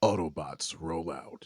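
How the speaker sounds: deep, low, heroic robot voice. Two speakers both say the famous Autobot line, Optimus Prime voice. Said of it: "do your Optimus [name]".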